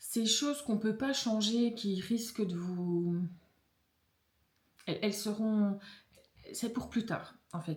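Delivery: stumbling, halting, fumbling speech with broken-off phrases. Addressing listeners about things they cannot change: stumbling over words. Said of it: "je bafouille parce que ça va trop vite".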